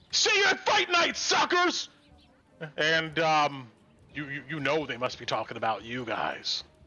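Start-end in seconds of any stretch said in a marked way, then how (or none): 0.1-1.9 very high, shrieked, jeering scream. Voicing an unseen townsperson jeering at the party: screaming taunt. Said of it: "somebody screams out".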